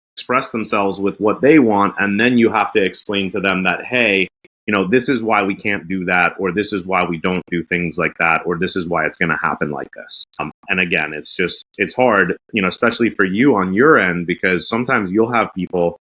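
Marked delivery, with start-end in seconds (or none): none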